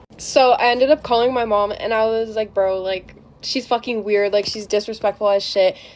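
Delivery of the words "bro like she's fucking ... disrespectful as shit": ordinary talk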